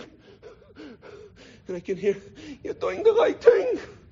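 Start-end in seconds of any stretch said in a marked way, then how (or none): 2.6-3.8 high, slow, tearful, breathless, emotional voice. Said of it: "She was all out of breath. She was so emotional".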